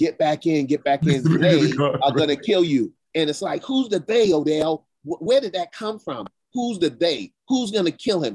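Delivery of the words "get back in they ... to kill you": put-on shout, higher and slower. Telling Odell about watching the inauguration, retelling shouting at the TV. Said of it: "I'm shouting at the TV".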